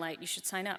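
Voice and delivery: ordinary talk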